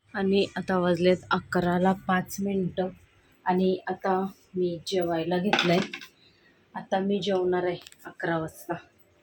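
soft, quiet, hushed voice.

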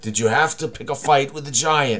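words broken up by coughing and spluttering. In a tabletop game, a character questions an ally, coughing and spluttering. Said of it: "coughing and spluttering".

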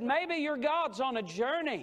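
pointed, scornful, heavily sarcastic tone. Retelling a prophet taunting rivals whose god stays silent: imitating a sarcastic remark. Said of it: "he said something very sarcastic".

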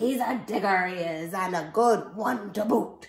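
booming, loud yell in pirate voice. Reading a story aloud, the pirate calls back to his crew: pirate yelling. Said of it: "then yelled back to the crew".

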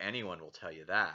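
ironic, sarcastic, mocking sneer. Suggesting the narrator mocks the characters' superstitious beliefs: sarcastic, mocking tone. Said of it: "ironic or almost a little sarcastic? Like, oh".

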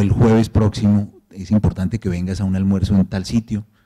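ordinary talk

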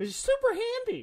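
very high, piping voice shooting up. Describing a spell to another speaker, voice going really high. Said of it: "Your voice got really high on".

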